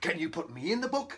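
ordinary talk

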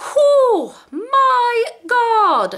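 shrill voice shooting very high. Reacting to a mini second mystery box, voice going really, really high. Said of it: "my voice just went really, really high".

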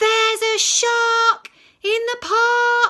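very high, very loud, shrill alarmed cry, "park" stretched. Reading a story aloud, the character cries out in his loudest voice. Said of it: "in his loudest voice".

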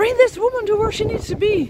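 play-acted shouting, pitched high. Retelling a man shouting at a bus driver, retelling a shout at a driver. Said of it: "he's shouting at the driver".

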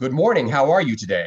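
very loud, projected, big theatre stage voice. Showing how a camera scene line sounds with stage projection: big stage voice. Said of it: "I'd be using my big stage voice".

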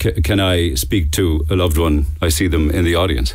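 ordinary delivery

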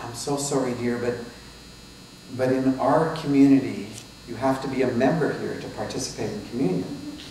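ordinary talk

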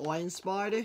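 fake Australian twang on the name. Repeating the toy's name on purpose: put-on Australian accent. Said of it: "I think that's Australian".

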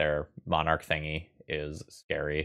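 ordinary delivery

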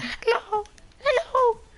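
put-on very high, squeaky voice. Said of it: "I can't put my voice that high".

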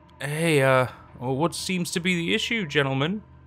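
anxious, nervous. Narrator reads a man's question to the men holding him at gunpoint, nervous. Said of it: "he asked nervously".

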